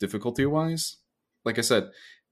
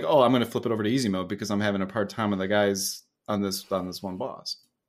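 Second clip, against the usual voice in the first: usual speaking voice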